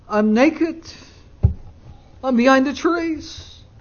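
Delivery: small, timid, meek voice. Speaker retells Adam answering God from hiding: retelling Adam's meek reply. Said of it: "he calls back in a meek voice".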